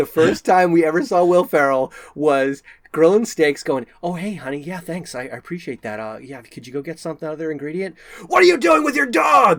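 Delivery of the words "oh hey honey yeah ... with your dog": full-on swooping scream, building and climbing higher. Retelling a comedy scene of a man grilling steaks: imitating Will Ferrell screaming. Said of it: "Just, like, screaming at them".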